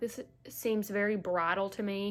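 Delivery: ordinary delivery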